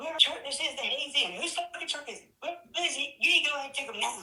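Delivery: put-on cop voice, angry cursing. Telling a story, acting out the older cop suddenly cussing. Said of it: "he's cussing".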